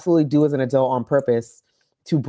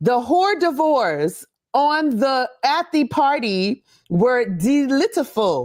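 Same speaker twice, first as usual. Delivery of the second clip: bold, self-assured, very confident reading aloud, very high; 9 semitones higher than usual. Recalling mispronouncing words while reading aloud, imitating confident reading aloud. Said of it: "I would very confidently read".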